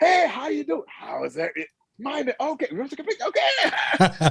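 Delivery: sudden put-on friendliness, very high and sing-song. Showing how a mean-looking pair reacts to a hello: acting suddenly friendly. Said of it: "we're gonna be like".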